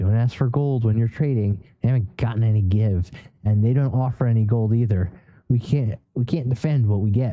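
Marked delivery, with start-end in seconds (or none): none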